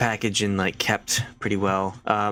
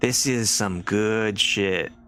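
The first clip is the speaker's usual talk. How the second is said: put-on French accent slipping into New York accent. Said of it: "she kinda drops her French accent".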